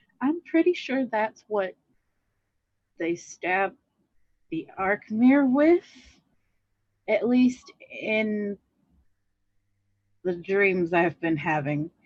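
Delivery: confiding aside, private and close. Speaking in character so only one other character hears: lowered voice. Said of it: "lower my voice so that only Damokos can hear me".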